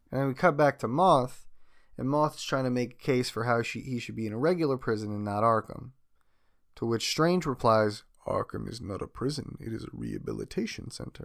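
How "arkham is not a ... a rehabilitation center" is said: soft, hushed, rasping, creaky, swooping sing-song put-on voice. Recounting a scene in which Strange replies to Moth, speak in a Hugo Strange voice. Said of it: "Do you like my Hugo Strange voice?".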